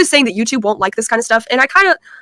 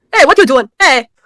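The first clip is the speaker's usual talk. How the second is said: put-on Nigerian accent, laid on; 2 semitones higher, 4 dB louder than usual. Showing another speaker what the nigerian accent is more like: nigerian accent. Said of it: "The Nigerian accent is more like a".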